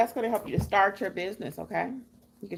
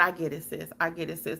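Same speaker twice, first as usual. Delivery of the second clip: put-on patronizing, condescending tone; 3 semitones lower than usual. Retelling what a lady said about the business: imitating a patronizing tone. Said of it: "Like it was something cute".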